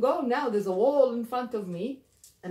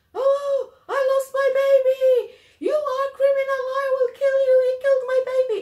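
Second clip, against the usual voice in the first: shrill, very high, very loud anguished screaming; 8 dB louder than usual. Retelling how the husband reacted after his wife fell: imitating a screaming husband. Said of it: "the man started screaming".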